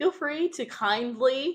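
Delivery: kindly stretched, slow and high, leaned on hard. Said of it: "emphasis on kindly".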